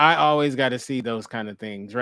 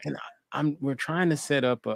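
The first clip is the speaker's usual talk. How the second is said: soft, hushed, whispered, with halting false starts; 5 dB quieter than usual. Chatting with another person, the speaker suddenly drops into a whisper. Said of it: "I don't know why I'm whispering".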